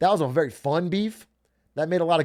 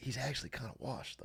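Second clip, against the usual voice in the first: very quiet, quick, hushed whisper; 4 semitones lower, 19 dB quieter than usual. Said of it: "I still have to be like".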